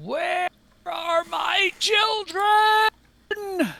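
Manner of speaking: very high, shrill, piercing, full-throated monster shriek. As the narrator describes the creature by the coffin, give its screaming creature voice. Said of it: "as this creature screams out".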